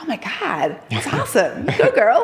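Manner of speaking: put-on drawn-out, swooping American accent. Contrasting british and american reactions, imitating an american: american accent. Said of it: "It's a good accent".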